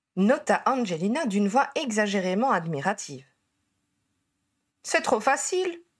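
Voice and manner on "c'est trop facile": high, protesting, objecting tone. After others in the group tease him, a man replies, protesting. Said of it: "protesta Bill".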